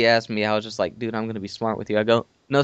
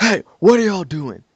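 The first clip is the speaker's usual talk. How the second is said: high, acted-out hollered yell; 8 semitones higher, 4 dB louder than usual. Retelling a stranger calling out to them in the woods, retelling a man yelling out. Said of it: "he just yells out".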